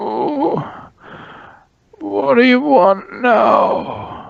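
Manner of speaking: very pained, aching, hurting voice, very high-pitched. A captive answers the party who came to rescue him, Dagnar's very pained voice. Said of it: "Comes a very pained voice from his mouth".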